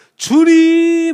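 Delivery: very high-pitched, slow, loud cry.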